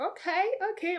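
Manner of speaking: put-on high, excited, like a thrilled kid.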